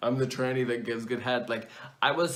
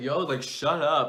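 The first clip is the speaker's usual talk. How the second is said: imitated rude tone of voice; 3 semitones higher than usual. Retelling what a blocked caller said: imitating a rude caller. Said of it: "being all kinds of rude to me".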